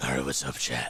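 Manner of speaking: put-on hero voice, pitched very deep. Streamer starting a thirty-minute challenge, greeting chat in a Batman voice. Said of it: "thirty minutes in a Batman voice".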